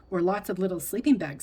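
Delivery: ordinary delivery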